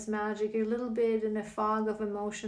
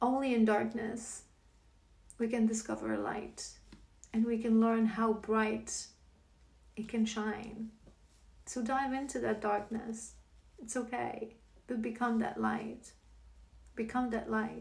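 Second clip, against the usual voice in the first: choked up with emotion; 3 dB quieter than usual. Speaking about finding light in darkness, getting emotional. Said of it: "I'm getting emotional".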